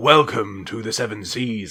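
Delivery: showy, grand captain voice with showman flair. Voicing a gaudy captain welcoming passengers aboard: [name]'s showy captain voice. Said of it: "He's just going, like".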